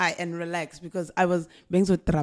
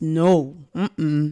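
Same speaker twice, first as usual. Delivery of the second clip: plain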